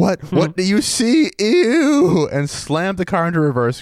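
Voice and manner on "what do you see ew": acted outburst, losing it, higher, slower, louder. Speaker retells reacting to a man's question, re-enacting completely losing it. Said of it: "I completely lost it".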